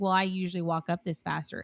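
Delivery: mock catty, snide tone. Retelling a stranger's remark while walking uphill in line: imitating a catty remark. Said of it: "she said something kinda catty".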